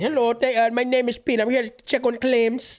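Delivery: put-on strong Indian English accent. Retelling a phone caller named Pete, imitate Pete's strong Indian accent. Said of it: "He had a strong ass Indian accent".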